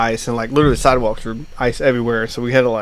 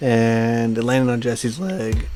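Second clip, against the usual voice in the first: cracking voice, with a drawn-out "and"; 4 dB quieter than usual. Telling how their snowmobile flipped and landed on someone's leg, voice cracking. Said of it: "Voice crack".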